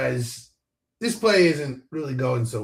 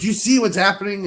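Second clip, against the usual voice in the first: mock yelling, much higher pitch; 7 semitones higher, 5 dB louder than usual. Retelling yelling at his nephew while watching a basketball game; retelling yelling at nephew. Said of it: "I'm like yelling at my nephew".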